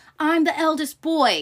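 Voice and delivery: mock petulant screaming outburst, high and loud. Retelling a scene where Kendall flips out, imitating Kendall screaming. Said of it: "And starts screaming".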